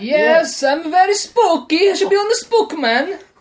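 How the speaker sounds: comic put-on Eastern European accent. A guest is introduced on the show as Dracula and speaks: Borat-like Dracula voice. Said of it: "You sound like Borat".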